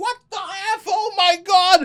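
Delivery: very high-pitched scream, stretched out long. Retelling the dog biting his dad's toe, imitating dad screaming. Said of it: "my dad starts screaming".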